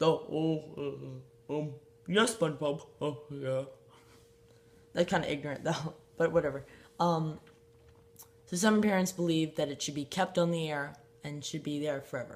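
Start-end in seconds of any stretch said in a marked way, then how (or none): 0.0-3.6 slow, drawn-out cartoon character drawl. A speaker acts out a cartoon exchange, answering SpongeBob; Patrick voice. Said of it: "And then Patrick goes like".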